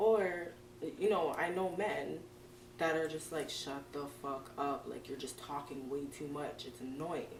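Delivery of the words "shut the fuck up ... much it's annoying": ordinary talk, nothing marked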